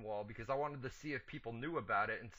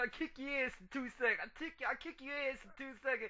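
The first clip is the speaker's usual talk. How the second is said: attempted put-on New York accent, pitched up; 13 semitones higher than usual. Repeating the other speaker's line back at him, in a mocking new york accent. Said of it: "Drop the New York accent".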